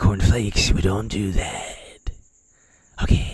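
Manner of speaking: loose, slurred, offhand dismissive delivery. Imitating the president answering a question about nuclear war: imitating Biden. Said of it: "He's like".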